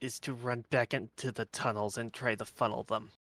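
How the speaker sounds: quiet muttering under the breath. Speaking in character to the party in Dwarven: saying under his breath. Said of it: "I'm going to say under my breath in Dwarven".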